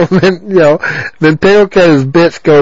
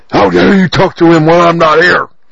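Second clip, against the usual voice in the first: spiteful, mean, nasty, vicious scolding. Retelling what a woman snapped at someone, mimicking her mean tone. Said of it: "she just sounded so mean here".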